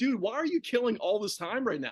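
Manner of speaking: ordinary delivery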